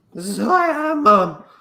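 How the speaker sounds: put-on high, loud teenage voice cracking mid-line. In a comedy bit as an emo character talking to Mum, funny cracky voice. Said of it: "With a cracky voice".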